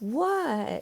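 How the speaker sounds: slow, high, stretched, lingering drawn-out "what". Narrating a story, Gina asks Bryn a one-word question: slow, high-pitched voice. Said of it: "in a slow, high-pitched voice".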